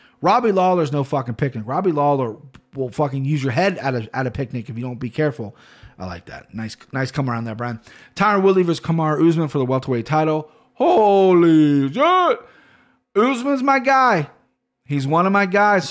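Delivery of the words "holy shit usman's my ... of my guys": very slow, loud, excited yell, stretched holy. Reacting to a title fight being announced: excited yelling. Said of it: "Sorry for yelling".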